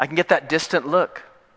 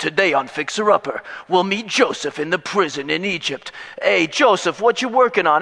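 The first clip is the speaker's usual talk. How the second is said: put-on Brooklyn-accented voice; 8 semitones higher, 5 dB louder than usual. Parodying a reality show set in a prison, the speaker hosts in a Brooklyn accent. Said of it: "I can't get away from the Brooklyn accent".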